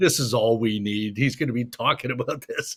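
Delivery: put-on laughing delivery. Retelling a player's remark on seeing the speaker: imitating someone laughing.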